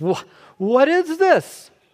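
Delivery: high, slow, whiny, entitled complaining tone.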